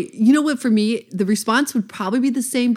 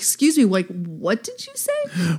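acted adamant, firm, slow, swooping delivery. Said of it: "I get so adamant".

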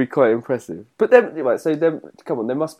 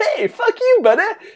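very high, friendliest, most welcoming tone; 4 dB louder than usual. Suggesting how to deliver a friendly-sounding insult, say it like Cat from Red Dwarf. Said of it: "saying it like Cat out of Red Dwarf".

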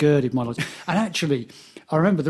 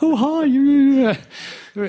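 play-acted very high, very slow, halting terrified voice; 9 semitones higher, 4 dB louder than usual. Retelling nervously phoning a rock star: imitating own terrified voice. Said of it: "that horrible voice you get when you're terrified".

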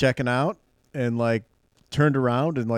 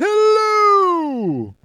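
very high, swooping, stretched-out, sing-song voice; 7 dB louder than usual. Showing what a talking belly button sounds like: Jerry Seinfeld belly button voice. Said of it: "her belly button has a voice".

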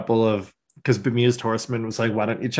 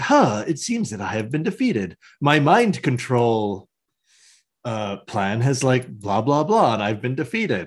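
calm, unbothered ghostly villain voice, swooping pitch. Retelling a cartoon scene, voicing the ghost villain: imitating a calm ghost villain. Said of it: "he's very calm, and he talks like this".

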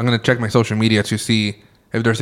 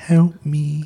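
put-on high, ghostly small little girl voice; 5 semitones higher than usual. Describing a scary voice heard in an ASMR video: imitating a little girl's voice. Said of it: "like a little girl saying".

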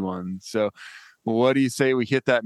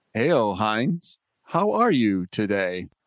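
robotic-sounding voice, much slower. Greeting someone at the start of a conversation, robotic-sounding voice. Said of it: "kind of a robotic sound to you".

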